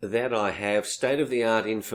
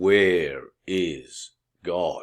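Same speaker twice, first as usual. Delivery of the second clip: mock-serious, solemn put-on voice, lower; 4 semitones lower than usual. Retelling a story, the speaker quotes a priest asking an eight-year-old boy again: imitating a serious priest voice. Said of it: "he puts a serious voice on".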